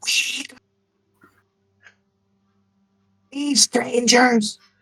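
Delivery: terrible raspy whisper, thin and very high-pitched. Voicing a hiding character who wants to talk: hoarse whisper. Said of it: "hoarse whispering".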